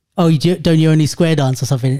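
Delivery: normal talking voice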